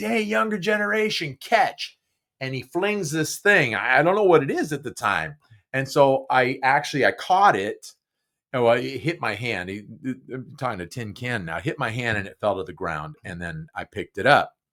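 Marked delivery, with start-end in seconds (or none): 0.0-2.0 very high-pitched hollered call. Retelling a call from a neighbor on an upstairs porch: imitating a man hollering. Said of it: "what he hollered to me".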